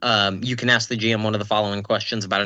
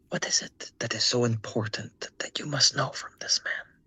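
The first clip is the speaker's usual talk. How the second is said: soft, hushed, very quiet whisper; 7 dB quieter than usual. Player's character whispers to Oswin so a nearby man can't hear: whispering. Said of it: "I kind of just whisper to Oswin".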